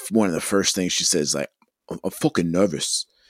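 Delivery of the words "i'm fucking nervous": put-on, attempted British accent. Quoting one of the first things she said, in an attempted British accent. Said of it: "the British accent".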